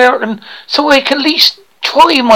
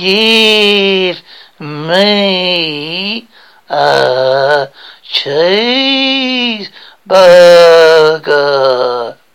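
clumsy, very deep American accent, "me" drawn long; 8 semitones lower than usual. Being coached on an accent, the speaker tries the line in an attempted American accent. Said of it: "well on your way to playing an American".

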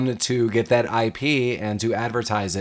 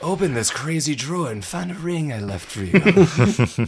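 put-on voice with slow, lingering, drawn-out drawl; 4 semitones higher than usual. Quoting a movie character, imitating Jack Palance. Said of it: "Jack Palance sounds like the Joker".

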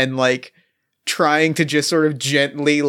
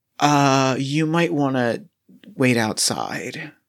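whispered line in character voice. Playing a character who tells another to wait outside: whispering in character. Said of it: "I kind of whisper in your ear".

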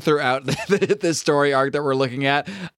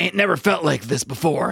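rough, creaky, raspy, gruff voice. Reading a comic character's thought bubble aloud, Wolverine impression. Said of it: "That's my Wolverine impression".

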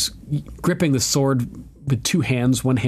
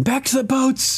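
acted-out scream, much higher pitch; 13 semitones higher than usual. Recapping an episode's battle, acting out the soldiers' cry: retelling men screaming. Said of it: "The men are screaming".

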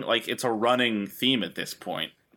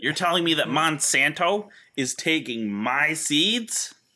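put-on voice, pitched up, dragged out and very slow; 5 semitones higher than usual. Doing a Steve Buscemi impression for the others: Steve Buscemi impression. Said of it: "that's my Steve Buscemi impression".

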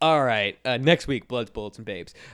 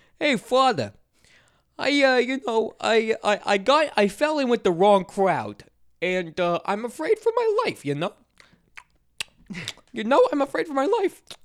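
very high, loud, sing-song, swooping, halting stammer; 12 semitones higher, 5 dB louder than usual. Retelling a scene where a man confesses to a priest: imitating how the confessing guy talks. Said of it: "He actually talks like that".

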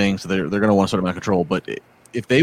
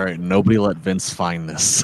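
ordinary talk, nothing marked

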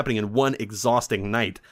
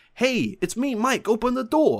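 put-on stupid voice, very high; 12 semitones higher than usual. Retelling a movie scene, a voice calling through the door: Mike's stupid voice. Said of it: "it's Mike's stupid voice".

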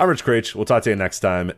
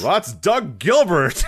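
put-on annoyed announcer voice, higher pitched; 11 semitones higher than usual. Retelling a wrestling commentary moment: imitating annoyed Vince McMahon voice. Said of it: "he does it in the Vince McMahon where he's annoyed voice".

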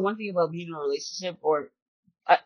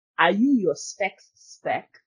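accent from Ghana. Quoting a saying from Ghana: thick Ghanaian accent. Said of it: "My accent about to come out real thick".

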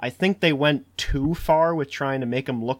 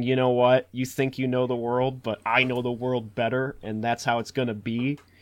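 usual speaking voice

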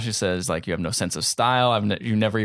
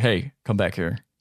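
put-on gruff voice. Retelling a job interview story to friends: gruff Emily Blunt impression. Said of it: "Very gruff voice for Emily Blunt".

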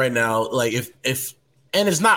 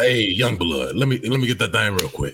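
put-on voice of a sixty-year-old man; 4 semitones lower than usual. Joking about the phrase young blood, imitating a 60-year-old uncle. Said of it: "like your 60-year-old uncle".

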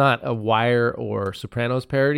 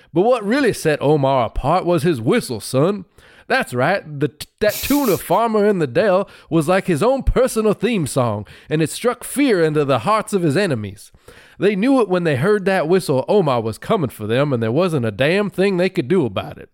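put-on cartoon rooster voice; 5 semitones higher than usual. Explaining a favorite Wire character to an audience addressed as son, in a Foghorn Leghorn voice. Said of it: "in the voice of Foghorn Leghorn".

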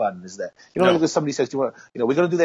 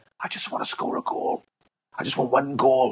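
hushed whisper, under the breath. Retelling what a mate said during the game: imitating a friend whispering. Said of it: "when he whispered to me".

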